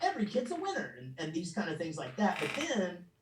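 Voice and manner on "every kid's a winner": super excited, bursting, very high voice. Recalling the first things recorded: super excited Chuck E. Cheese voice. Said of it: "super excited".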